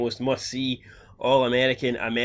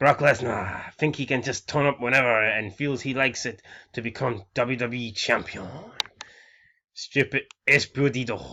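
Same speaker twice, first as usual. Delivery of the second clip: put-on Spanish accent, hyped wrestling-promo delivery. Acting out a wrestler's backstage promo into the camera: Alberto Del Rio impression. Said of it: "I'm trying to do an Alberto Del Rio impression, so the accent".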